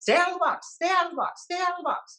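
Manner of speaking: very high-pitched, repeated over and over. Retelling what a man told to guard a taped-off box said, in a high-pitched voice. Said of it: "speak with a high pitched voice".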